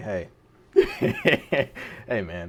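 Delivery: hushed, quiet whisper under the breath. Retelling walking in and speaking to the owner: retelling a whisper. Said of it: "I whispered to the owner".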